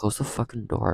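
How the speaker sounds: muttered under the breath. Recalling being twelve and a stepbrother leaving the door open, mumbled under breath. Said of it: "I mumbled under my breath".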